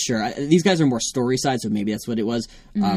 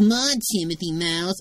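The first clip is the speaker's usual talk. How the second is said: put-on rebellious teen voice, higher pitch; 6 semitones higher than usual. Redoing the Dumbo voice as a rebellious teen. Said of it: "a rebellious teen".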